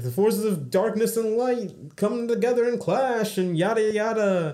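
put-on old-timey early 1920s radio announcer delivery. A co-host describing the theme of season two, in a 1920s announcer voice. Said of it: "In the 1920s announcer voice".

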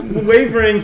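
high, loud excited squeal.

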